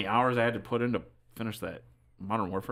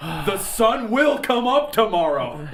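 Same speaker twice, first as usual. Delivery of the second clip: mock yelling, higher and louder; 11 semitones higher, 9 dB louder than usual. Imitating another speaker yelling at the villagers: imitating Tim yelling at villagers. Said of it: "Tim sounds like he's yelling at the villagers".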